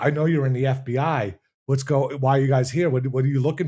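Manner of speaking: mock accusing, paranoid-sounding tone. Retelling what a paranoid man said to them, acting out his accusation. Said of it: "he starts calling us out like".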